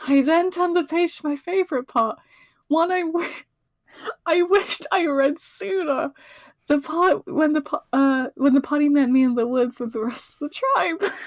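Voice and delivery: reading with rising emotion, becoming overcome. Reading a favourite passage aloud to others, getting emotional. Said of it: "Do you need a moment".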